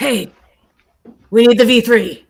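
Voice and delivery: very high, loud, bossy, commanding stage whisper. Voicing a character asking a shopkeeper for a book: commanding, bossy stage whisper. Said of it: "a very c-, commanding, bossy stage whisper".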